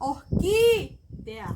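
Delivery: slow, loud orquídea with stress on the I.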